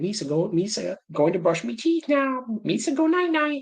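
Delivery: very high-pitched alien creature voice. Imagine how he would have been doing it at home, in a Jar Jar voice. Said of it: "He talked like Jar Jar".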